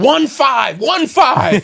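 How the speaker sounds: mock frantic, loud, high, urgent repeated yell. Retelling helping a lady who couldn't get out her phone number, re-enacting screaming at her. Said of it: "That's why I was screaming at her".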